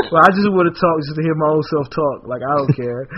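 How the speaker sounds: ordinary talk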